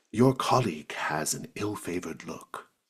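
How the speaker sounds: hushed, quiet half-whisper. Voicing a character speaking privately about a colleague, half-whispering. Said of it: "Lotak whispers to you".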